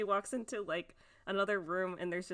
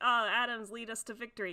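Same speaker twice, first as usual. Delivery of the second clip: normal talking voice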